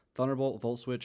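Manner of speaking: usual speaking voice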